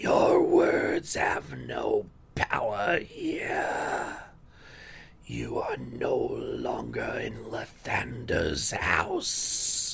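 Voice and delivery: hoarse, rasping, sinister whisper. Narrator voicing a cultist speaking in Lathander's house, in a hoarse whisper. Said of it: "he has this hoarse whisper of a voice".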